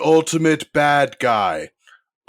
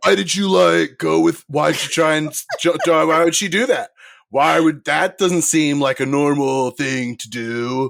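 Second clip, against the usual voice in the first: put-on stumbling, catty, overly jealous frat-boy boyfriend voice. Imitating a narrator voicing a character as pissed off teenager, bitchy jealous boyfriend. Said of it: "he sounds like the bitchy, overly jealous, like, boyfriend".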